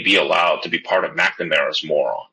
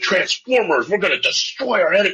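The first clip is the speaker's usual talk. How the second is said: play-acted childish tough-guy voice, pitched up; 14 semitones higher than usual. Mocking the Secretary of Defense's macho posing: imitating someone talking like a twelve-year-old. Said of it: "why are you talking like a twelve-year-old?".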